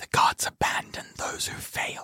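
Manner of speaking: hushed, breathy whisper. Game master voices the hag speaking so only one player hears, whispering. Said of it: "but he whispers".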